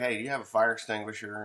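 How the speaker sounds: mock unbothered, calm, easygoing, matter-of-fact tone. Retelling a man phoning for a fire extinguisher, imitating a calm caller. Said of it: "And he's kind of calm".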